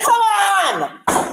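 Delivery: high, loud yelling. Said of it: "Stop yelling".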